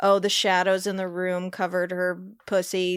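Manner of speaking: normal talking voice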